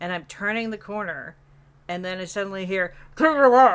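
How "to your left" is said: very loud, muffled, mumbled scream. Retelling a teammate who suddenly spoke: imitating a mumbled scream. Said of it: "mumbled in his, like, mic in his mouth".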